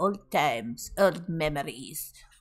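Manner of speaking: low put-on French accent. Asked to repeat the line in a French accent, the speaker says it in a French accent. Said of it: "Say it in a French accent".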